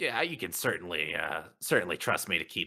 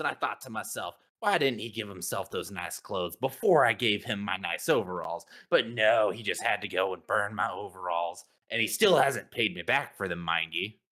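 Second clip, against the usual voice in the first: plain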